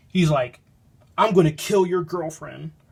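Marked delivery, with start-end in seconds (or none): 1.1-2.7 furious, pissed-off, angry voice. Retelling a book's plot, the speaker voices the boss: imitating an angry boss. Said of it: "the boss is really pissed off".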